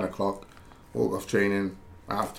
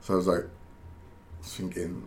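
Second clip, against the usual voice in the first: plain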